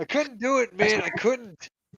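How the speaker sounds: mock struggling angry voice. Mimicking a co-host who couldn't watch a show, mock-struggling angry voice. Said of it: "You hear the struggle in his voice".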